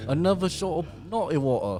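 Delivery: attempted British accent. Ordering another round of drinks in a comedy bit, in an attempted British accent. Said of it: "I was trying to do the British".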